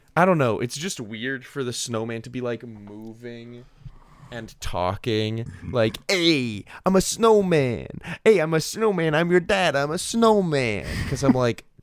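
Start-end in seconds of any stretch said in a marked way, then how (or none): 6.0-10.8 pitched-up, strutting, swaggering voice. Mocking a movie snowman who talks with swagger: imitating Michael Keaton's swaggering snowman. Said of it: "talk with some swagger".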